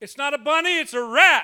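loud yelling, called out. Speaker recalls spotting a rat in the house, retelling a yell. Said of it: "I yelled out".

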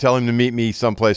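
usual speaking voice

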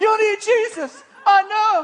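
reenacted shouting. Retelling tackling him in the sand: retelling yelling. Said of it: "yelling every time".

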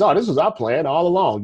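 ordinary delivery

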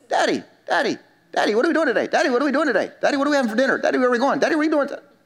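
put-on high, nagging, pestering child's voice, nonstop. A father acts out his kids pestering him: imitating his child asking. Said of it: "one of my kids will get up".

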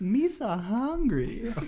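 very high, swooping, sing-song goofy alien voice. Joking with co-hosts about the worst voice to talk in, baby Jar Jar Binks voice. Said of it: "Jar Jar Brinks".

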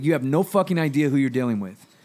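heated speech. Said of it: "he was talking like this".

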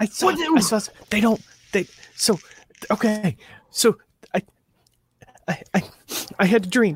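muffled whispering. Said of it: "whispering and covering the phone with his hand".

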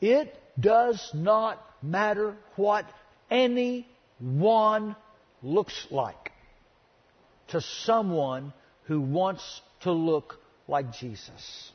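slow, deliberate, every word clearly enunciated. Telling listeners of a lesson to listen so they can't misunderstand, slow and clear. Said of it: "I'm going to say this slow and clear".

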